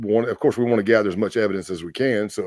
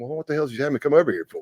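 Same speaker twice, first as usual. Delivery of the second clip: acted cheeky, wisecracking smart-aleck tone; 4 semitones higher than usual. Retelling a reply to the president at the door: retelling a smart-aleck retort. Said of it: "I was kind of being a smart aleck".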